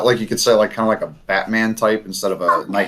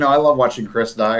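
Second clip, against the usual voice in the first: usual speaking voice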